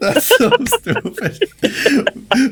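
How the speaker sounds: high, slow, laughing disbelief.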